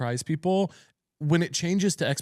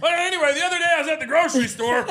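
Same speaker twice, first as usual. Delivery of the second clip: put-on screaming, higher; 13 semitones higher than usual. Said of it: "dynamo screaming in the room".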